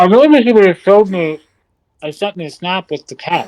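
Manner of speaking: muffled speech around a full mouth of food. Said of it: "Sound like you're talking with your mouth full".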